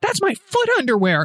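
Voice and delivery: high-pitched outburst, half yelled, mild. Retelling what John yelled about the foot underwear: imitating someone yelling. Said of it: "after he yells out".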